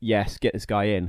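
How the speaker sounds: ordinary talk, nothing marked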